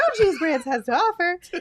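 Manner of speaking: high, laughing, bad mock cartoon voice. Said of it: "That's terrible".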